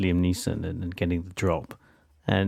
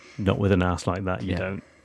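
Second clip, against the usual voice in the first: ordinary delivery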